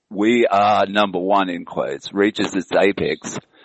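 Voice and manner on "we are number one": ordinary talk, nothing marked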